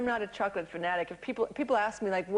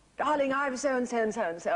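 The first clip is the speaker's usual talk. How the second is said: put-on English accent, pitched up; 6 semitones higher than usual. Retelling what he said when he called from America, in a generic English person voice. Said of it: "it's kind of like my generic English person".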